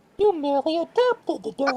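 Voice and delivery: very high, squeaky cartoon voice. Asked by the others to do his version, in a voice like Mickey Mouse. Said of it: "You sound like fucking Mickey".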